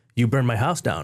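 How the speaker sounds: normal talking voice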